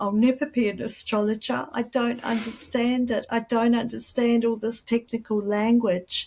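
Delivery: mock words choked out through high, tearful crying. Retelling sitting outside under the stars, imitating own past crying. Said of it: "crying, going".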